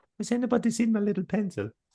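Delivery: put-on German accent, pitched very high. Repeating a line from getting organized earlier: German-ish accent. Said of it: "you can do a German accent-ish".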